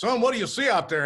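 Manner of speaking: put-on big Texas-accented voice. Retelling what Big Tim asked him in Irving, Texas, in Big Tim's big Texan voice. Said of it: "he talks in that big Texan voice".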